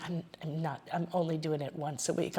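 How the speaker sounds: quiet, soft, hushed half-whisper. Retelling what a client half-whispered: imitating a half-whisper. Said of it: "she whispered to me".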